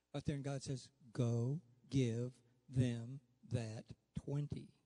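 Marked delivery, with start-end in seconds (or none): 1.1-4.6 imitated stern, firm voice, lower. Retelling how god spoke in church: voicing god saying it firmly. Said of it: "when he says it like that, real stick".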